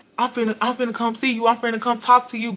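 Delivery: flustered, panicky, stumbling words. Retelling how a boyfriend started panicking on the phone: imitating someone panicking. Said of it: "he started panicking, like".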